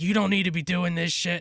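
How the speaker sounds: put-on angry teacher voice, high-pitched and scolding. Retelling how the teacher reacted to their streaming: imitating the teacher yelling. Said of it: "yelling at us".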